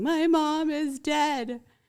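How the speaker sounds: mock very slow, high, drawn-out hysterical tearful sobbing. Retelling what a woman said at the condo door, imitating hysterical crying. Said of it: "kind of hysterically crying, going".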